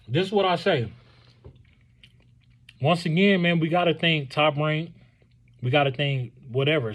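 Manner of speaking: speaking while chewing, mouth full. A speaker eating during his talk about boxing wraps up, talking while chewing. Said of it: "Excuse me for eating and chewing and talking".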